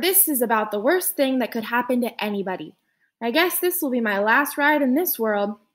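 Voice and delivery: plain reading voice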